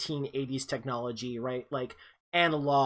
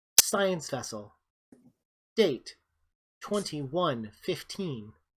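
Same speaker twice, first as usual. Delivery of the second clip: put-on ship computer voice. Voicing the ship's computer announcing a contact: voicing Mother, ship computer. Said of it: "over the, the comm, uh, it says".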